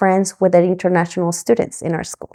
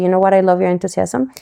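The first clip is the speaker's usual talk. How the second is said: ordinary delivery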